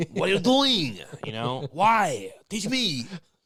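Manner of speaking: put-on slight French accent, high, swooping pitch. Retelling Frenchie's line again, with a slight mock French accent. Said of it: "two percent French was like".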